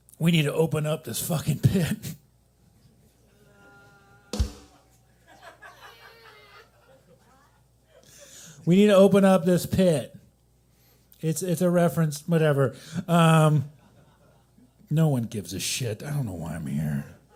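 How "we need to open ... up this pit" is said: swooping death-metal vocalist voice. Comedian doing an impression for the audience: death metal veterinarian impression. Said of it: "my impression of a death metal veterinarian".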